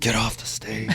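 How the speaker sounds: very quiet, under-the-breath whisper. Retelling what a parent said onstage to the speaker: imitating a whisper. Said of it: "whispered to me".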